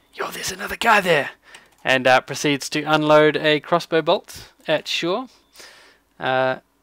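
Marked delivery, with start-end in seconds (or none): 0.2-1.3 whispering, higher and faster. Playing Jimjar, sneaking around the side to Dagran, whispering. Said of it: "Whispers to to Dagran".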